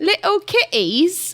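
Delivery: really bad put-on British accent. Asking the other speaker about supplements for cats, in a bad british accent. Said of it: "that was a really bad British accent".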